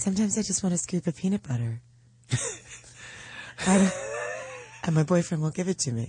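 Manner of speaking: fake sexy, sultry whisper. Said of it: "It just sounds like you're whispering".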